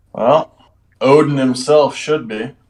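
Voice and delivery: mocking, sarcastic, sardonic tone. Retelling what another character says to his friend: sarcastic. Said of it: "he says in a manner that could be called sarcastic".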